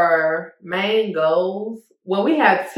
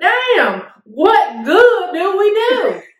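put-on Southern accent, high-pitched and loud; 12 semitones higher, 5 dB louder than usual. Hosts list Mississippi's bad reputation and one voices a reaction: put-on accent. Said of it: "I love that accent, baby".

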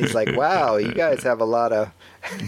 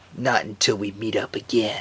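cool, composed, unbothered delivery; 2 semitones lower, 3 dB quieter than usual. Retelling a City Hunter scene after saving a lady: Saeba Ryo acting cool. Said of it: "he had to say this cool thing like".

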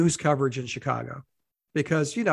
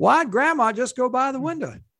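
put-on Texas accent with pitch raised; 9 semitones higher, 4 dB louder than usual. Continuing a bad-weather radio bit, in an attempted texas accent. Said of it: "That's the best Texas accent I can muster".

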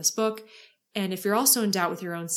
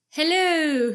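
high, loud mock English accent. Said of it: "in an English accent".

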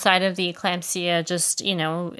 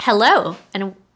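overloud, overly enthusiastic, blasted delivery; 2 semitones higher, 6 dB louder than usual. Starting the podcast intro for listeners, too loud. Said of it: "I went too loud".

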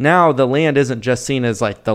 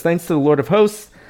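mock, very sarcastic, overdone reverence, quick and pitched up; 5 semitones higher than usual. A speaker discussing Locke reads out a quote, quoting sarcastically. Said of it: "this is McKeer here very sarcastically".

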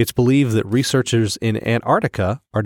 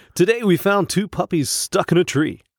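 high-pitched broadcast news anchor newsreader voice; 8 semitones higher than usual. Asked to do a news reporter voice, giving a mock news report in presenter voice. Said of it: "That's my presenter voice".

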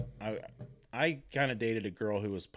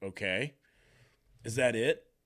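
mock fed-up, annoyed, slow and mad; 4 dB louder than usual. Retelling a mother's words on walking into the principal's office: imitating someone mad. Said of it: "she's so mad".

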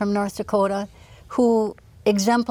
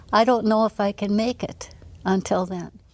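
normal talking voice

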